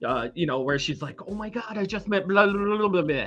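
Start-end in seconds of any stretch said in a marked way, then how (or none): 1.3-3.3 mock, imitated starstruck gushing excitement. Imitating a young actress gushing in interviews: imitating starstruck excitement. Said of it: "You could hear it in her voice".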